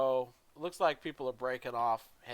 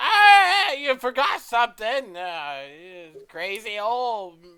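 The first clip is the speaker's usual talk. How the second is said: put-on very shrill, loud, slow, drawn-out old woman's screech; 10 semitones higher, 13 dB louder than usual. A game master voices an old woman calling from the shop, screeching. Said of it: "You hear this screeching voice".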